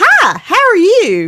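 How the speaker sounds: put-on very high, distinct, drawn-out Louisiana accent. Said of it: "in her in her Louisiana voice".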